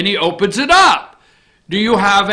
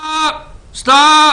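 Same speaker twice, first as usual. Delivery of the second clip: high-pitched yelling, repeated twice; 7 semitones higher, 3 dB louder than usual. Host yells at Josh to stop the video, yelling stop. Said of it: "Sorry. I'm yelling at Josh".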